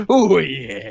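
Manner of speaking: high, loud, hammed-up mock pirate accent. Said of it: "you want a pirate accent".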